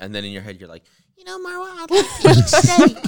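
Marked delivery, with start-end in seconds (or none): 1.2-3.1 very high, sing-song, swooping, made-up put-on voice. Acting out the imagined someone else who answers in her head: put-on voice of an imagined other person. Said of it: "What a voice".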